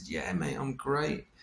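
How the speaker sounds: Cockney twang. Retelling an old best friend appearing and greeting: imitating Gary's Cockney twang. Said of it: "with his sort of Cockney twang".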